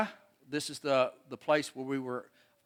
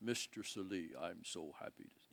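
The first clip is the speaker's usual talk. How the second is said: very quiet, barely-there, hushed way of talking; 8 semitones lower, 18 dB quieter than usual. Showing photos and imitating how the worker Peta talks: imitating Peta's voice. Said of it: "He has this voice that talks like this all the time".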